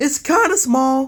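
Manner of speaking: voice cracking mid-line, jumping up high. Giving a map their rating aloud, the speaker has a voice crack. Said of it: "That was a voice crack".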